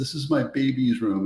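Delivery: mock weepy, tear-filled, crying voice. Retelling the lady's reply about her son's room: imitating someone crying. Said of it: "And she started crying".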